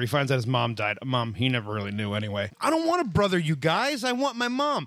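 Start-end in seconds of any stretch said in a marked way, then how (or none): 2.6-4.9 mock whiny, complaining tone, high. Mocking how Jesse acts after learning his mom died: imitating Jesse's whining. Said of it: "Jesse is still a whiny little bitch".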